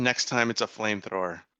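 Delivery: muttering under breath. Voicing a character after a fight: muttering under breath. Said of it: "I mutter under my breath".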